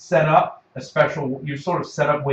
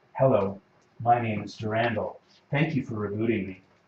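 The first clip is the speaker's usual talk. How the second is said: synthetic AI computer voice; 4 semitones lower, 5 dB quieter than usual. Voicing the rebooted AI speaking from a laptop: Durandal computer voice. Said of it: "a voice comes out of your laptop and says".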